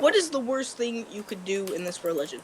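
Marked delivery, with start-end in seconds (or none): none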